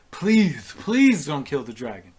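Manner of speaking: very loud, begging, pleading tone. Voicing a character who runs to an ally's side: begging. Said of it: "runs to your side and is begging you".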